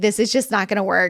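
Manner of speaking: normal talking voice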